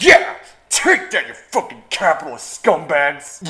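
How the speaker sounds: very loud, swooping, sarcastic whoop. Recounting the history of divided Berlin to listeners: sarcastic. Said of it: "You you can tell I'm being sarcastic".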